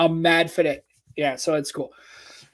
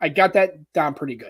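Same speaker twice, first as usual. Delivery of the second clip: ordinary talk, nothing marked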